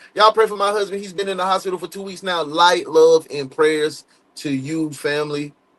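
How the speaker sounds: ordinary talk, nothing marked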